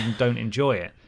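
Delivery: ordinary talk, nothing marked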